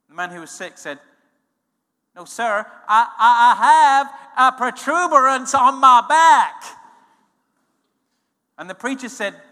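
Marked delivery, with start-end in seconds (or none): 2.2-6.7 put-on American accent, louder and slower. Retelling a sick man answering a preacher, in an American accent. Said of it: "That's an American accent".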